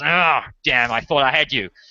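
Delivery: soldier voice, growled out. Game master voicing a soldier whose blade drew no blood, growling soldier.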